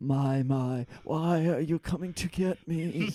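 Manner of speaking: frightened, breathy, scared delivery. Playing the one Locke is coming to get, in a breathy, scared voice. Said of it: "delivered in a in a breathy, scared voice".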